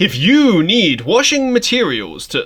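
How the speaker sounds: projected announcer voice. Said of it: "it'd be like".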